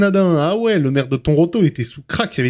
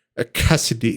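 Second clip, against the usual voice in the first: put-on English accent, pitched lower; 7 semitones lower, 3 dB quieter than usual. Imitating how Cassidy says her own name: imitating Cassidy's English accent. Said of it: "elle te le fait avec un accent anglais".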